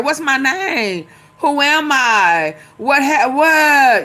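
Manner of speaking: mock, very slow, bewildered, playing-dumb voice. Imitating Trump pretending not to know anything: imitating Trump playing dumb. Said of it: "He finna play dumb".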